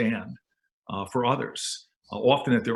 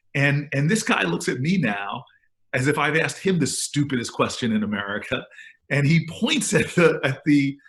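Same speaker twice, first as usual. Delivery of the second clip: normal talking voice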